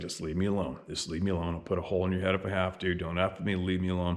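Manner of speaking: muttering under breath. Retelling what was muttered while looking at the ground: muttering under his breath. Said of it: "under my breath, I'm just like".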